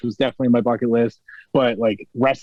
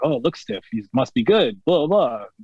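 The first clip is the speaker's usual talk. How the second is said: bad, lousy put-on Japanese accent. Retelling what a wrestler said about a match: bad Shibata impression. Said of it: "My shitty Japanese impression, I guess, of Shibata".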